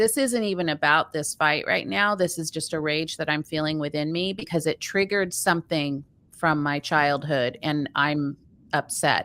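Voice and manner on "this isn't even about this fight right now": usual speaking voice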